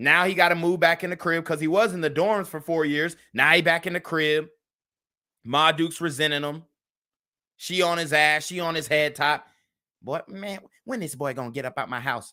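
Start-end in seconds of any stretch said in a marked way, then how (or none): 10.0-12.3 low, muttered complaining grumble, half under the breath. Imitating a resentful mother complaining about her grown son: imitating a mom muttering under breath. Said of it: "She saying the shit under her breath".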